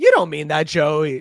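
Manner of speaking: play-acted, patronizing, condescending, talking-down tone. Retelling a scene where one character speaks down to another: imitating a condescending tone. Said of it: "is very condescending".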